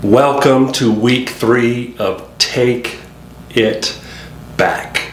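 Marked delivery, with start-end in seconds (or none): 2.4-5.1 slow, deliberate, each word set apart with pauses. Welcoming listeners to week 3 of the show, pauses between Take, It, Back. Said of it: "You have to say it like that. You have to say it really deliberately with the pause in between all three".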